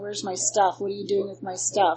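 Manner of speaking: ordinary delivery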